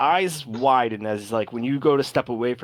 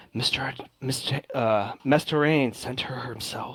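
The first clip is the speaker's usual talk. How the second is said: hushed whisper under breath, quieter; 4 dB quieter than usual. Voicing two people whispering as a player character leaves: whispering under breath. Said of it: "very much under their breath whisper".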